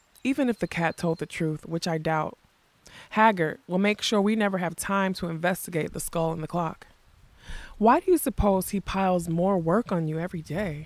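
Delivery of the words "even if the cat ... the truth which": plain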